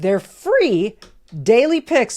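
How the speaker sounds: voice cracks with emotion on "free". Speaker reading a sponsored sports-picks ad, voice cracking on 'free'. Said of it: "Did you hear how my voice cracked".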